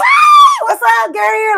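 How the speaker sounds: mock very high, booming, drawn-out bubbly sing-song shout. Showing how they greet people at a party: imitating own bubbly greeting. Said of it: "but I'm also very bubbly".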